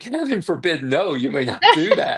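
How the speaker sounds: put-on polite, pleasant Southern accent with swooping pitch. Retelling the judge's reply to a request in court, in a nice Southern accent. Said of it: "in her nice Southern accent".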